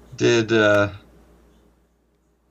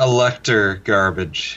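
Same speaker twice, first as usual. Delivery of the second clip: ordinary talk, nothing marked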